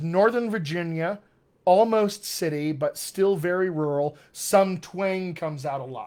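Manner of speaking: ordinary talk, nothing marked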